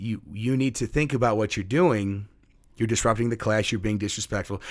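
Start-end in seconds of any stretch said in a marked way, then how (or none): none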